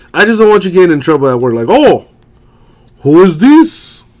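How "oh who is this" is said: bad fake French accent, very slow and loud. Joking about someone at work overhearing the chat: bad fake french accent. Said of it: "that's my bullshit French accent".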